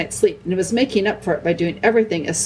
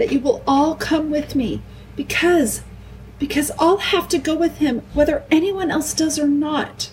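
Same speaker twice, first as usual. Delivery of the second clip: high-pitched, quavering, wavering, tremulous voice; 8 semitones higher than usual. Narrator reading a story, voicing a character answering the others, tremulous voice. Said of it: "said Lucy in a tremulous voice".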